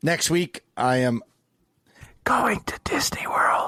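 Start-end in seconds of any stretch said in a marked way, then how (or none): 2.2-3.7 hushed whisper, spoken to one side. On a podcast, keeping the kids in bed from hearing: whispering. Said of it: "sorry, I'm whispering".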